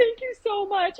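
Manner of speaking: mock bawling, high and tearful. Recounting a ticket stop, the speaker acts out their own tearful thanks. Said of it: "I'm bawling".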